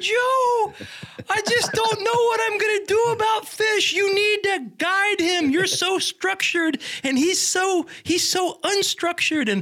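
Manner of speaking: put-on high-pitched grandma voice. Retelling the speaker's grandmother calling about fish, in a high-pitched grandma voice. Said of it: "she had that high pitched voice".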